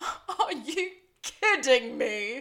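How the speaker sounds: clumsy, badly done British accent. Retelling a scene where Zapato attacks Nigel, the speaker voices Nigel's reply in a bad British accent. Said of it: "doing a bad man British accent".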